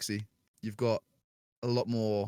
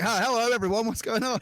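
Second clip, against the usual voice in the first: put-on, very high, loud drunken hollering; 12 semitones higher, 5 dB louder than usual. Retelling playing a horror game drunk, acting out their own greeting, retelling a drunk shout. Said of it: "Just shouting".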